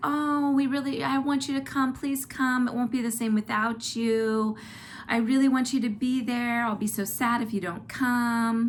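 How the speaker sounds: high, whiny pleading tone. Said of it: "gets a little bit kinda whiny with us".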